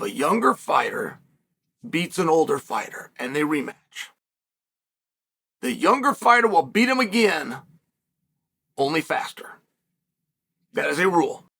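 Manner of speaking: slow, low, measured, deliberate delivery. Explaining a fighting rule to viewers, speaking slowly. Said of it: "I'm speaking slowly".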